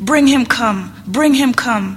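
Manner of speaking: loud commanding call, full of authority. Narrator reads a character giving an order, in a loud commanding tone. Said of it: "in a loud and commanding tone of voice".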